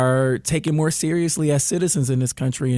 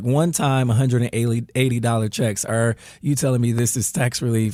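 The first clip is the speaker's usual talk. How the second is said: usual speaking voice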